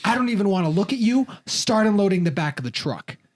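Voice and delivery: mock scolding yell. Retelling a father yelling in the driveway: imitating someone yelling. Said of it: "my dad just starts yelling at me".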